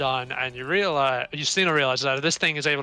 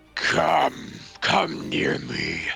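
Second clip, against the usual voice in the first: menacing, terrifying monster voice. Voicing a monster speaking in common to the party: menacing monster voice. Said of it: "terrifyingly, as it says".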